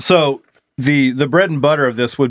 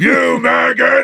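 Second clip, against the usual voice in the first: high, rough, creaky, raspy voice; 9 semitones higher than usual. Doing a Sergeant Slaughter impression after spotting a gift: Sergeant Slaughter impression. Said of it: "I was gonna do a Sergeant Slaughter impression".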